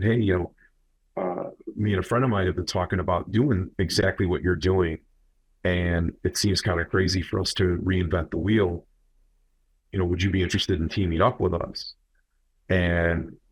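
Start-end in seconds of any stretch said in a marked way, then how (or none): none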